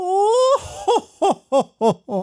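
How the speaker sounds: very high, leisurely, drawn-out ho-ho-ho laugh. Asked to do the laugh: Frieza laugh. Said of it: "if I had to do a Frieza".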